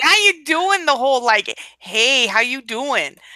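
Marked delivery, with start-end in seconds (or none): 1.8-3.1 slow, cheesy, flirtatious delivery. Teasing the other speaker by acting out cheesy guys in bars, imitating a cheesy bar flirt. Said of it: "That whole like arm on the wall thing that like you cheesy guys do in bars".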